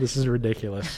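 laughing and giggling through the words. Apologizing after soda went up the nose: laughing while talking. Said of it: "get myself composed somewhat".

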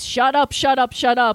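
usual speaking voice

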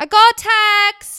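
put-on British accent, shrill, high, loud and drawn out. Asked for the British take, the speaker redoes the line in a British accent. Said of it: "rather than the British one".

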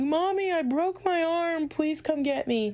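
very high, shrill, piercing yell. Recounting waiting an hour for her mom to be called, retelling a yell. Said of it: "And I finally yelled".

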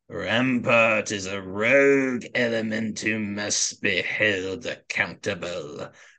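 raspy, gravelly, rough voice. Retelling the scene, speak as the Emperor addressing the senators in the chamber, a really good Palpatine impression. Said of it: "a really good Palpatine".

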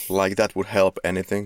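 ordinary talk, nothing marked

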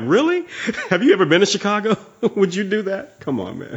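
high, laughing, incredulous disbelief.

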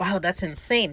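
plain

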